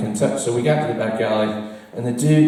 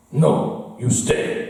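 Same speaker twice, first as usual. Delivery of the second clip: put-on Chinese accent. Retelling what a bouncer said while blocking the way: imitating a bouncer's chinese accent. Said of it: "if I'm doing an offensive accent".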